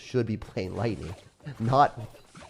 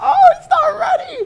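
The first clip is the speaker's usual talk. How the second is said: voice cracking into a loud, high, shrill screech; 14 dB louder than usual. Reacting as an opponent is caught unready: screech in voice. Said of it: "Did you guys hear my screech in my voice?".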